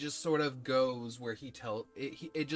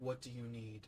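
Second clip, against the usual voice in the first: very quiet, hushed, calm, not deep voice; 2 semitones lower, 9 dB quieter than usual. A voice answers the player's stern demand in a calm man's voice. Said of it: "It is a man's voice, not deep, but almost calm".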